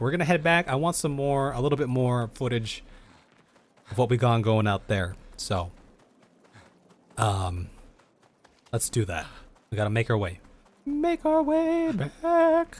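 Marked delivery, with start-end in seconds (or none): 10.9-12.8 very high, very slow cracking voice. Playing a game and heading back to the overworld, voice cracking. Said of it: "Voice crack".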